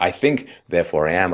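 ordinary talk, nothing marked

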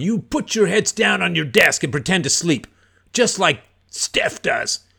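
mock screaming. Retelling a boring man in class screaming at everyone, imitating a man screaming. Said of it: "he was screaming at everyone".

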